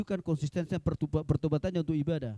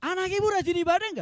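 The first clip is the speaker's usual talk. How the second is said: high, loud, emphatic repeat. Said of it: "saya bilang".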